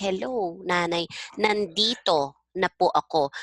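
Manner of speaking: ordinary talk, nothing marked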